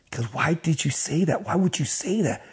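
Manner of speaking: soft, crying, tearful, begging tone. Retelling a man who fell to his knees in front of the speaker, imitating him crying. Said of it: "He's crying".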